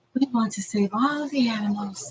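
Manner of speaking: light, gentle, soft wildlife-presenter voice. Retelling how someone on TV talks: imitating Bindi's light voice. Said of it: "Bindi's talking like".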